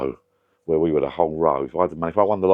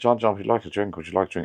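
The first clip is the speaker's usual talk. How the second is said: broad, thick put-on Irish accent, laid on heavily; 3 semitones higher than usual. Speaker retelling what a man they met used to say, in an Irish accent. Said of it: "I'm allowed to do an Irish accent".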